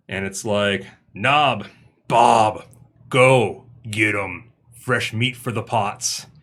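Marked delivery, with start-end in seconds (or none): 1.1-6.2 slow, unhurried, domineering, bossy commanding voice. Game master voicing Dob giving orders to the others, in a bossy Dob voice. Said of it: "you don't have to be so bossy".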